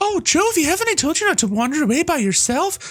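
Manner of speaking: very high-pitched scolding voice. Reading game dialogue aloud, the mother of a child character: Jovie's mom voice. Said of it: "They have the same voice, just in different pitches".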